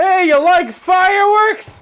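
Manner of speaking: mock shrill, very slow, high, drawn-out scream. Retelling pulling up to people on a dock: imitating screaming. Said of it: "we're just fucking screaming at 'em like".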